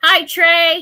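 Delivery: very loud, high-pitched, all-out yelling. Greeting a viewer in the chat: yelling. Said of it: "now I'm yelling".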